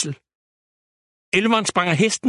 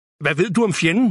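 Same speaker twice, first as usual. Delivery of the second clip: plain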